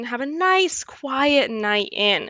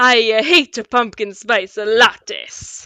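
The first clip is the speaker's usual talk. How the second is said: put-on Italian accent; 5 dB louder than usual. Retelling what a man said while looking right at the speaker: Italian accent. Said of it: "said in an Italian accent".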